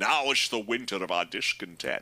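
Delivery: put-on Scottish accent. Joking that everyone could be voiced as Sean Connery: Sean Connery voice. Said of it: "you could do everybody as Sean Connery".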